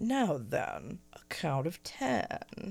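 soft, deep, calming, soothing voice. Recalling a character who counted to ten, the speaker does Nobody's deep, calming voice. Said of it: "really strange, deep, calming voice".

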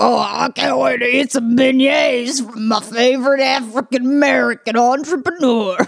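big, blustering, excitable dad voice. Comparing the televangelist to a cartoon father: The Princess and the Frog blustering dad voice. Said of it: "Like the blustering dad on the, in The Princess and the Frog".

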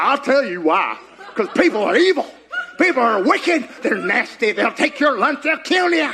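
acted sinister accusing tone. Preaching about the enemy's voice, voicing the devil: voicing the devil. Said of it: "he'll be like".

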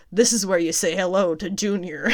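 normal talking voice

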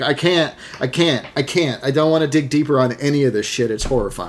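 ordinary talk, nothing marked

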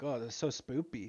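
ordinary delivery

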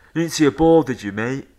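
brash, bolshy, half-shouted voice. Telling a golf story, the speaker mimics a player shouting at him: imitating a man shouting. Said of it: "just shouting at me".

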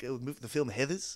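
put-on New Zealand accent. Recounting how a man pronounced a film title, imitating his Kiwi accent. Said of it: "he said it in that great Kiwi accent".

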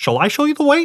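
very high-pitched cartoon frog puppet voice. Telling a story about a frog, retrying the frog's line in a Kermit the Frog voice. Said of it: "That's Kermit".

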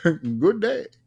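put-on high, old-time radio announcer voice. A host signs off to everyone listening, in an old-time radio voice. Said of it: "That was an Old Timey Radio one".

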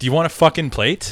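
put-on disgusted tone. Retelling a spouse's reaction at the dinner table, retelling a disgusted remark. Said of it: "and like with disgust".

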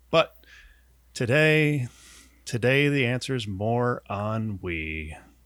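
put-on sadness, hushed. Podcast host introducing today's show, mock-sad and quiet. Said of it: "you got really sad and quiet when you said ennui".

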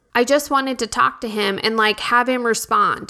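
ordinary talk

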